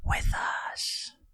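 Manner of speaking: single breathy, barely voiced, hushed whisper. Voicing a sword's solitary whisper to a player: whispering voice. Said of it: "a solitary whisper again say".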